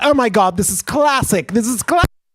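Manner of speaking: put-on British accent in a lady's voice. Retelling a neighbor answering the door: imitating a British lady. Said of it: "it's a British lady".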